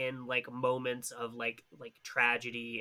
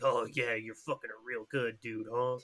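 sleazy, crude, leering bro-style delivery. Retelling a movie scene, the cops jeering: imitating crude, leering cops. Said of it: "the cops suck and are like".

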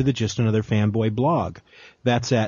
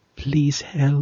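put-on sexy voice, much higher; 4 semitones higher than usual. Asked to say a Fifth Element line, made sexy: sexy Leeloo voice. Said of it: "Make it sexy".

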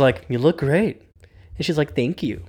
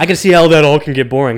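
raised voice dripping with sarcasm; 6 dB louder than usual. Retelling a character's line in a scene: imitating a sarcastic line.

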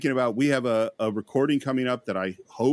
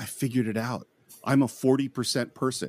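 put-on gleeful voice, slower. Speaker quoting what a friend once said, retelling a gleeful remark. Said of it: "in a gleeful voice".

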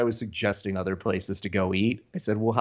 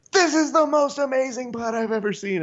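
mock, very high, shrieked commentator call; 3 dB louder than usual. Imagining a fighter calling golf: Kevin Phillips-style screaming call. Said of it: "doing the Kevin Phillips version of".

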